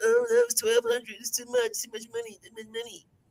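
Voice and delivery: play-acted, very high, sing-song, swooping whine. Speaker acts out what people would say, in a mock-whiny voice. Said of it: "why you got to use that voice though?".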